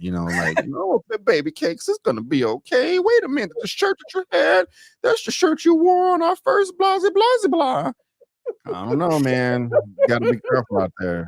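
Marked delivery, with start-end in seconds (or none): 0.7-7.9 very high-pitched put-on woman voice. Speaker gives advice, acting out a line in a put-on woman voice. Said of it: "I cannot stand your woman voice".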